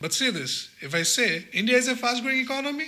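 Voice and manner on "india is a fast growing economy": pitch rises on economy, question-like. Showing an unnecessary questioning rise on a statement: rising pitch at the end. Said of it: "rising the tone unnecessary".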